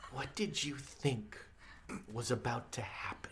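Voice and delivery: cat voice, scornful.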